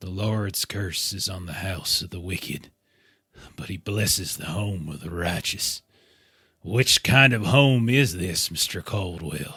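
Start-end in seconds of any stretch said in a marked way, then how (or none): 0.0-5.8 muttered quietly under the breath. Voicing a disgusted character quoting scripture at a strange meal: muttering to himself. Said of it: "he just mutters to himself".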